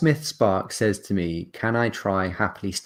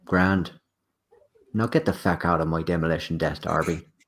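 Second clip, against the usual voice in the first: simple, blunt character voice, said plainly; 3 semitones lower than usual. Ending the session as Gorgorax tells the four to leave: Gorgorax voice. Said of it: "he simply says".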